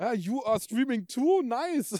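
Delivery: flustered English, high, loud, slow and blurted.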